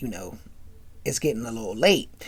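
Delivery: soft stage whisper, barely voiced. Retelling a dorm meeting where Kim whispers to Whitley: imitating a whisper. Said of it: "Kim whispered this at Whitley".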